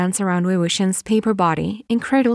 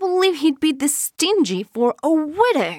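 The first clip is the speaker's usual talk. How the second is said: voice full of disgust, pitched up; 7 semitones higher than usual. Narrator voicing a wedding guest's remark, disgusted. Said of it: "a disgusted voice says".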